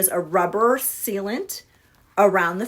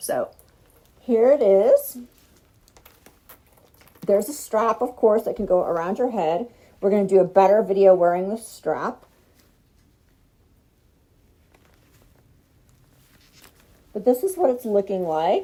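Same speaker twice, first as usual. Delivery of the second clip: muffled voice, as through a mask; 3 dB louder than usual. Showing a gas mask held against the face: voice muffled by a gas mask. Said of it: "my voice is gonna be muffled".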